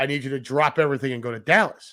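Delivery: ordinary delivery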